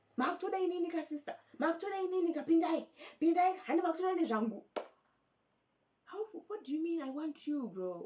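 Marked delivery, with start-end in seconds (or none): 0.2-4.6 mock loud hollering, high and raised. Retelling how a man in a dispute over change was shouting: imitating a man shouting. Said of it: "This man was shouting".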